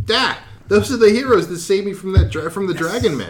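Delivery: very high-pitched, loud hollered shout. A game master voices Ring Tarkin calling out to the heroes, Ring Tarkin shouting. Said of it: "A giant man walks towards you, his face stoic, and he breaks into a huge smile".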